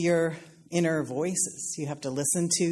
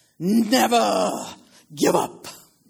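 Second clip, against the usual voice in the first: loud, put-on commanding, authoritative delivery; 3 semitones higher, 5 dB louder than usual. Retelling a speaker at an Oxford commencement podium, retelling in authoritative voice. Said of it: "said in that authoritative voice".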